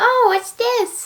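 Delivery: put-on high, slow, curious wide-eyed little kid voice. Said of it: "going like".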